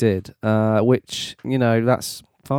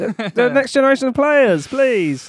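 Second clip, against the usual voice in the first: mock, put-on cry. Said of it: "Iniesta, help!".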